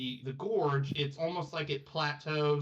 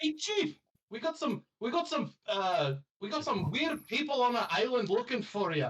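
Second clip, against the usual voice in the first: put-on Scottish accent, pitched very high; 9 semitones higher than usual. Playing a kobold reporting to the chief, the speaker uses a scottish accent. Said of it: "I gotta get back into my Scottish accent".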